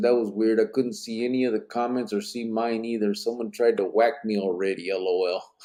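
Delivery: ordinary talk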